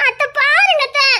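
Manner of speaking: high, slow, fake pleading whine. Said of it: "இப்படிலாம் நடிக்க முடியுது".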